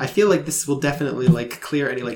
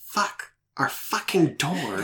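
hushed, grumbled mutter under the breath; 2 semitones higher, 3 dB quieter than usual. Narrator voicing Bertram about his door, muttering under his breath.

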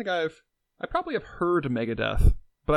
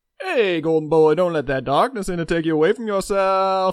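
carnival barker voice, louder; 4 semitones higher, 6 dB louder than usual. A podcast host introduces the co-host by nickname, in a carnival barker voice. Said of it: "You said it like a carnival barker".

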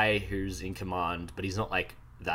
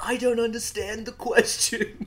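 mock very high, loud, drawn-out scream; 5 dB louder than usual. Recapping a confused drawn character being questioned, mock-screaming his words. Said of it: "And then he screams".

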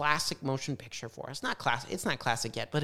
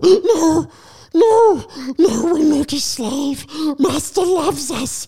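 very high-pitched, full creature character voice; 12 semitones higher, 15 dB louder than usual. Answering a line from another voice, the speaker gives a Gollum Sméagol impression. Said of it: "in your best Gollum Sméagol impression".

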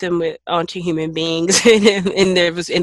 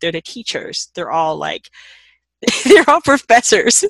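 talking with giggles breaking in; 3 dB louder than usual. Describing birds as characters in a book, laughing while talking. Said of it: "Why are you laughing?".

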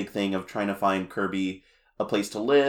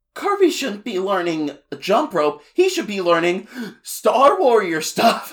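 put-on very high, breathless, winded little-kid gushing voice; 11 semitones higher, 7 dB louder than usual. Speaker quoting a character's line from a show, imitating a breathless little kid. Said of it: "like he's like trying to catch his breath from talking so much".

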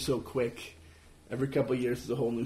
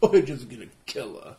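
put-on smug voice, louder; 6 dB louder than usual. Imagining what Robert Wagner would say: smug Robert Wagner impression. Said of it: "He's, like, smug".

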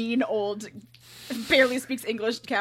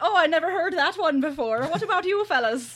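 put-on, high-pitched Irish accent; 6 semitones higher, 3 dB louder than usual. Retelling what the cop said to Mike, in an Irish accent. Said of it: "I definitely read as Irish".

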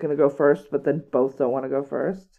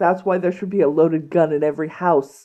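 ordinary talk, nothing marked

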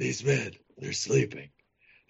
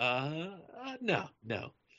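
usual speaking voice

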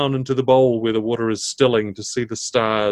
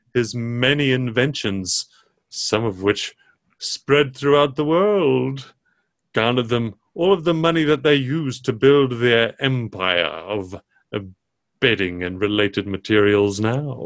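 talking camel character voice. Voicing a camel who tells the players about a family's history; talking camel voice. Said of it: "And the camel tilts its head and looks at you and says, "Well, I hear you got off on the wrong foot with young Henry." / I would be happy to read your fortunes in the stars for you." And he long neck".

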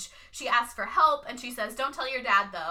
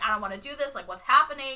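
put-on irked, annoyed, exasperated tone; 2 semitones higher, 3 dB louder than usual. Retelling how a character is pulled into a dance: imitating an annoyed protest. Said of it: "and she's pissed".

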